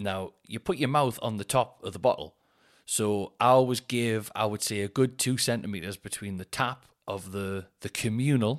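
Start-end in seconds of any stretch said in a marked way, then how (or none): 7.9-8.6 strong emphasis punched on the word "communal". Describing filling a bottle at the gym water fountain: stress on COMMUNAL. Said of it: "I can't emphasize that word enough".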